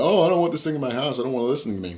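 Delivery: acted freaking out. Describing how people react to a device that listens at home, mock freaking out. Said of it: "people are all like freaking out".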